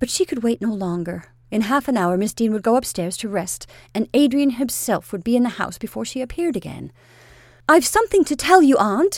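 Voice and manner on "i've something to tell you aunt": abrupt, sudden, point-blank, raised blurt. A niece speaks up to her aunt, beginning abruptly. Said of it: "Rachel began abruptly".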